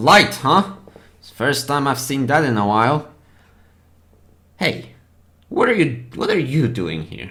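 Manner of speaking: put-on dragon voice. Voicing a blue dragon who speaks to the players: speaking as a blue dragon. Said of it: "is the dragon talking to us?".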